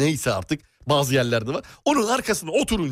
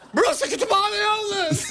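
shouting, much higher pitch. Telling a story about a library, one speaker shouts. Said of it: "Abla sen de bağırıyorsun".

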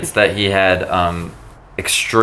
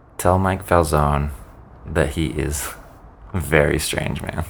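quiet, low half-whispered speech; 5 semitones lower, 6 dB quieter than usual. Half-whispering last words in front of friends and family: half-whispering. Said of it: "I whisper to Usher".

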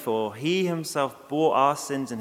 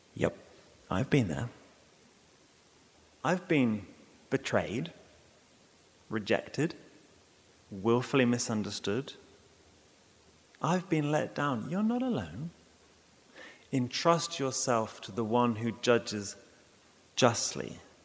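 hushed whispering voice, quieter; 2 semitones lower, 5 dB quieter than usual. Voicing the imagined words of Christ at your side: whispering. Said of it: "and he whispers".

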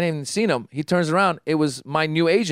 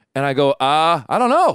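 plain

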